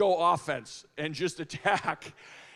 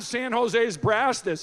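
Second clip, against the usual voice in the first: normal talking voice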